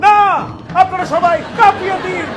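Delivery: over-the-top, shouting, ranting news presenter voice.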